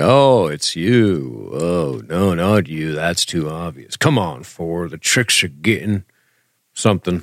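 put-on gruff cowboy voice. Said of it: "I'm doing more like a bad Robert Mitchum impersonation".

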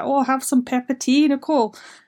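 terrible put-on Scottish accent, older woman voice. Retelling what an older woman in prison used to say, Helen impression, bad Scottish accent. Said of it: "I just offended everyone from Scotland with that terrible accent".

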